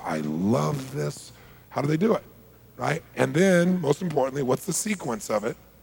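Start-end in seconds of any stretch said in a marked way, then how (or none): 0.0-1.3 very slow, soft, deliberate, with "love" stretched. Explaining how people phrase things, demonstrating the phrase said slowly. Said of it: "They say it slow".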